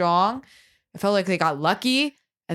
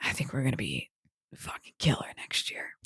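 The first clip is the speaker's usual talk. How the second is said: soft, very hushed, secretive whisper; 9 semitones lower, 10 dB quieter than usual. Talking with co-hosts about next year, trying not to jinx it: whispering. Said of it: "But I'm whispering it".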